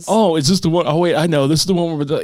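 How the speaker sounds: imitated mocking tone. Retelling how the police officer made fun of her: imitating a mocking police officer. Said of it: "the police officer is making fun of her".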